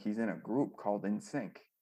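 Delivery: ordinary talk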